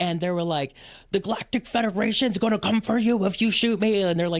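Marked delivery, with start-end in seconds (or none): 1.1-4.0 high, pitched-up yell. Retelling men on a balcony telling police something: imitating someone yelling. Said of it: "yelling and whatever".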